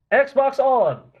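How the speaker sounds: very high-pitched, shrill yell. Shouting voice commands at an xbox that will not turn on: yelling. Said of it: "We can stop yelling now".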